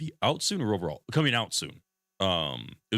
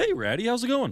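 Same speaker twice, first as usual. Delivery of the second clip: very high, cracking, goat-like voice. Greeting someone, the speaker's voice cracking. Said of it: "Why did my voice crack there?".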